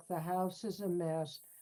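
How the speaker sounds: flat, self-pitying drone on one note. Describing how someone sounded, the speaker acts out a mock self-pitying monotone. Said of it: "It was a monotone. It went like this. Like poor me".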